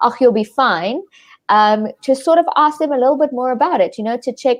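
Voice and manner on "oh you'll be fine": usual speaking voice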